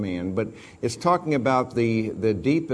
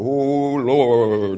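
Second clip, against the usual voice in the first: louder mock quavering prayerful voice; 6 dB louder than usual. Mocking how people change their voice when they pray: mock quavering prayer voice. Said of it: "they begin to have this quaver".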